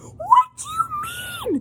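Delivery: very high, slow, fake sobbing wail of disbelief.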